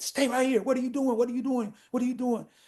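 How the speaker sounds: frantic, hysterical, pitched way up, rapid and rushed. Retelling a hotel owner's confrontation during a chase: imitating a hysterical man. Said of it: "And he got all hysterical".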